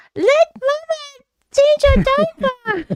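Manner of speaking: very high-pitched puppet voice. Describing trying the voice too while talking about a baby; Elmo voice. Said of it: "a really good Elmo voice".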